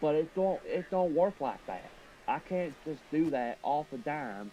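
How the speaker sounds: tried-on American southern accent. Speaker wanting to sound more American tries it mid-sentence: put-on southern accent. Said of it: "except that's exactly what I'm doing right now".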